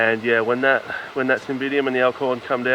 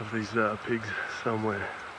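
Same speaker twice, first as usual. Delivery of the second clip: soft, hushed whisper. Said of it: "I'm whispering because I know I'm just on the fringe".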